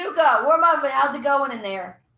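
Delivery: loud, hollered in-character yell. Calling down the hall to the other players in character: in-character yell. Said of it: "I'm gonna yell out".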